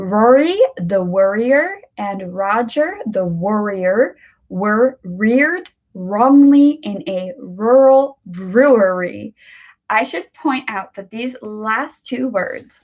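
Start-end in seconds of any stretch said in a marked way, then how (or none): 0.0-9.3 unhurried, slow, careful, deliberate reading. Reading an R tongue twister aloud, starting off slow. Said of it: "I will start by reading it slowly".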